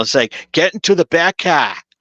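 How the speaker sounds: put-on Boston accent. Discussing the Batman casting, showing the feared Batman with a Boston accent. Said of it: "I didn't want my um Batman to have a Boston accent".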